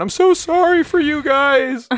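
mock very high, loud, slow, weepy, drawn-out crying. Retelling the kids' friend in the car, imitating a friend crying. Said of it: "Their friend started crying and went".

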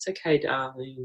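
gentle, soft, calming, soothing murmur. Showing how a mother comforts her crying baby, in a soft, calming voice. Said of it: "a soft, calming voice".

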